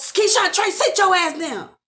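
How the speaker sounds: high, commanding, scolding yell. Acting out what the sister would say to the kids: imitating a yell. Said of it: "And she would have yelled".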